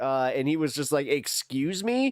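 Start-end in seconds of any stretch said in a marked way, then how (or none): 1.1-2.1 mock indignant retort tone, pitched higher. Retelling a reply in a debate: imitating an indignant reply. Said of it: "he literally acted so indignant".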